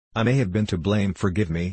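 ordinary talk

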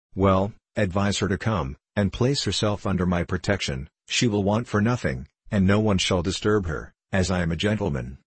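usual speaking voice

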